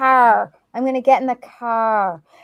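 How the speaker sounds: Western New York accent on car, drawn out. Showing how car is said when asked: Western New York accent. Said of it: "Go ahead".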